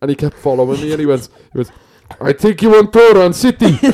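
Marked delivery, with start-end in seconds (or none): 2.2-3.8 put-on Russian accent, much higher, slower. Retelling a man who kept following the speaker, put-on Russian accent. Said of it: "I just sound Russian, lad".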